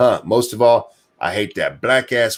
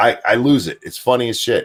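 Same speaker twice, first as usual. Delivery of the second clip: plain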